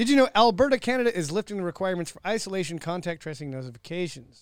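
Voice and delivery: words tumbling out really fast, rattled off, rushed. Moving on from a sidebar to a new topic: talking really fast. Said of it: "I know I said that really fast".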